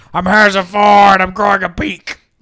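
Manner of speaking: high, quacking, duck-like voice. Playing out a joke drug's side effect, talking like a duck. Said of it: "it'll also make you talk like a duck sometimes".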